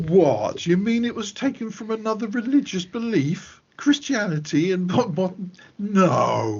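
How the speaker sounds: sarcastic feigned shock, high and slowing.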